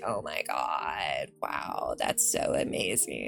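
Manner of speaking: very slow, whispery, breathy vocal fry drawl. Mocking how Orange County people talk: Kim Kardashian vocal fry voice. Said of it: "have you ever heard Kim Kardashian talk".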